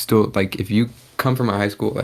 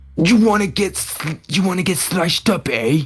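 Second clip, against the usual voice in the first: very high, put-on London accent; 9 semitones higher than usual. Trading London-accent jokes, the speaker takes a turn: mock London accent. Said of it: "I can't even do that shit".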